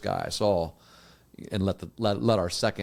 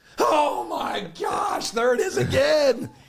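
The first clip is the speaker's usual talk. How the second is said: acted, very high, drawn-out, loud exasperated yelling; 5 dB louder than usual. Recounting a guy at a game as the ball was snapped: imitating a fan yelling. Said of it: "that kept yelling".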